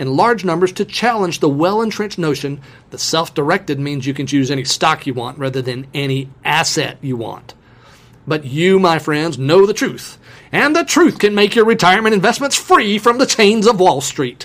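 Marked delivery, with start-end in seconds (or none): 8.3-14.4 dramatic, pulpit-preaching evangelist preacher cadence. Quoting a man's remarks, done in an evangelist preacher voice. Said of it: "he said in his best evangelist voice".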